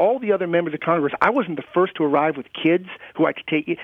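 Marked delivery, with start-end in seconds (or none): none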